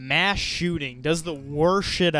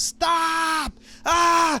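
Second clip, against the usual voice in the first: very high scream of pain; 3 dB louder than usual. Retelling being held in a painful lock: retelling screaming in pain. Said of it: "I'm just screaming".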